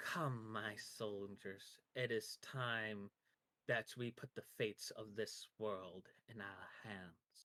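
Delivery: three overlapping female voices at different pitches. Voicing a figure calling her soldiers: three women speaking at once. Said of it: "three pe-, women are talking all at once and at different pitches".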